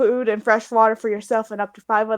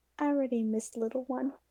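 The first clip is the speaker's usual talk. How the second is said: barely audible, very quiet, hushed half-whisper; 2 semitones higher, 15 dB quieter than usual. Voicing a character at camp for the night: half-whispering to herself. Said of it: "she kinda whispers to herself".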